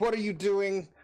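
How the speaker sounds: high-pitched, acted, in-character yell. Voicing a character named Gus in a tense fight: character Gus yelling. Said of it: "so Gus is yelling".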